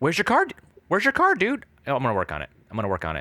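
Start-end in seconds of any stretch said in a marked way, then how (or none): 0.0-1.7 very high-pitched, frantic, manic put-on voice. Discussing how a man from Michigan talks, a speaker imitates him, a little high. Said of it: "a little high".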